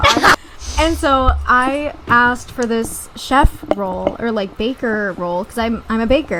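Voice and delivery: ordinary talk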